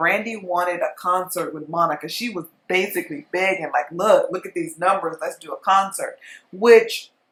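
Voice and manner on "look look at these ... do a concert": usual speaking voice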